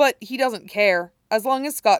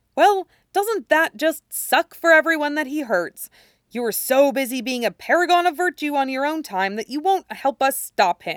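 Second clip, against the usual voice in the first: high, disgusted, disappointed reproachful tone; 7 semitones higher than usual. In an argument with a man who won't help, speaking in a disgusted tone. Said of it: "His tone is disgusted".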